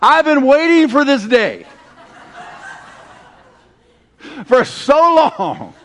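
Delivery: put-on laughter, high and slow. Retelling how a woman answered while losing it, imitating her laughing. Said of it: "she just started losing it".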